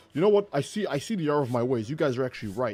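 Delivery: plain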